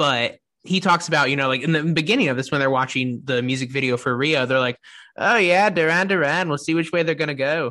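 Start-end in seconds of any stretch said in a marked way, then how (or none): 5.2-7.7 clumsy, awful fake Irish accent. Podcaster quoting people watching the duran duran video, in an awful irish accent. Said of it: "that's my awful Irish accent".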